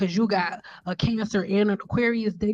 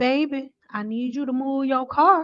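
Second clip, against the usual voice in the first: put-on, laid-on, high old-lady grandma voice; 6 semitones higher than usual. Retelling a woman speaking from her rolled-down car window, in her old lady grandma voice. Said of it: "she present her old lady grandma voice".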